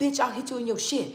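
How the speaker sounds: put-on aggressive, hostile tone. Retelling how she used to check people: imitating her own past aggressive threat. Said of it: "check people like".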